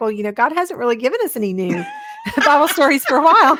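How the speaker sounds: sarcastic quip, sing-song. Retelling own reply to a conference attendee: retelling a sarcastic remark. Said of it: "I know this was a little sarcastic".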